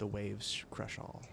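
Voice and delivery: very soft, secretive whisper. Voicing a character who leans in close to one player: whispering. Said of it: "and whispers".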